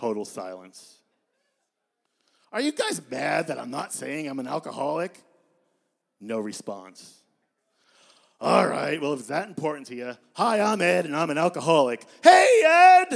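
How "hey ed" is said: very loud, shrill shout from a group. Recounting introducing yourself at a meeting, imitating the group yelling back. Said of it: "Would you please stop yelling?".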